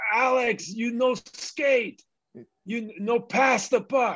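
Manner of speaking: mock, very slow, drawn-out, high-pitched coach yelling. Retelling how the coach yelled at him: imitating the coach yelling. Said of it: "the coach would yell at me".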